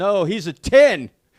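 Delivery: loud, high, slow yell. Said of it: "I yelled out".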